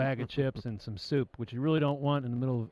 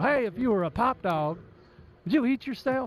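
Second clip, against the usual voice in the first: put-on deep announcer voice, higher and louder; 9 semitones higher, 4 dB louder than usual. Quoting a famous comedy sketch about a hot dog: Harry Caray impression. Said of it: "the famous Harry Carey sketch, Will Ferrell".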